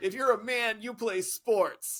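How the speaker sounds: put-on slow, settled, final-sounding pronouncement. Retelling someone's closing line: imitating a loud declaration. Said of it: "say it that loudly and then pause".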